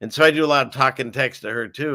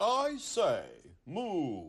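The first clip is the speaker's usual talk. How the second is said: hushed, high, swooping, sing-song cow voice; 5 semitones higher, 11 dB quieter than usual. Speaker showing the voice he did for Moo, Moo the cow voice. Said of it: "this is what I said for Moo".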